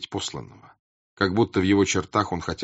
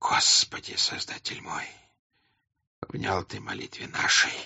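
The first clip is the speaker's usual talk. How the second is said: quavering, trembling, hushed near-whisper; 5 dB quieter than usual. Narrating a novel, a man turns to the icons and prays aloud in a trembling voice. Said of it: "дрожащим голосом сказал он".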